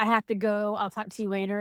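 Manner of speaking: plain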